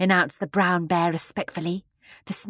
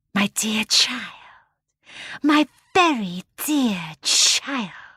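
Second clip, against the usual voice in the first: dainty, sibilant, small, delicate hissing voice; 2 semitones higher than usual. Narrator voicing a hamadryad coming out of its cage to a child: small delicate hissing voice. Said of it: "said a small, delicate, hissing voice".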